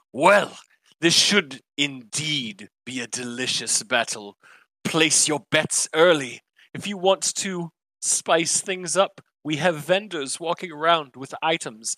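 loud, booming announcer voice. An arena announcer introduces the next battle to the crowd; booming announcer voice. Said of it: "his voice booms loudly and he goes".

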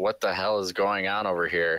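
ordinary delivery

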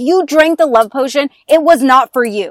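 put-on angry woman's voice. Retelling a scene from a story, imitating the woman: angry reply. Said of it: "She's so mad".

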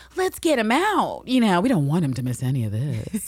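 mock jeering, ridiculing, very mocking and taunting. Retelling what a woman in a scene says, imitating a very mocking tone. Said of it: "She says it in a very mocking tone".

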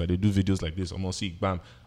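ordinary delivery

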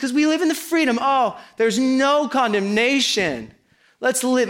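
high, drawn-out, facetious, tongue-in-cheek sarcastic tone. Mocking the excuse that freedom means anything goes: mock facetious tone. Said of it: "I'm being facetious here".

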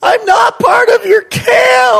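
put-on very high, raspy, loud nine-year-old kid yell. Retelling yelling to a far-off camp counselor as a kid, retelling a childhood yell. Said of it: "And I yell in my little 9-year-old".

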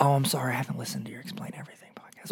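mock whispered, breathy, sorry-sounding murmur. Retelling what podcast listeners say when they meet: imitating an apologetic listener. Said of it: "It's always apologetic".

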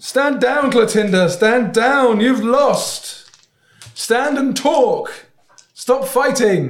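very high, very loud commanding shout. Fighting in a game scene, shouting at an enemy to stand down: shouting in character. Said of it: "I'm gonna shout".

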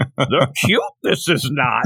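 put-on wise old sage character voice. Joking about a villain's mask, suddenly talking in a Yoda voice. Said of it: "I start talking like Yoda".

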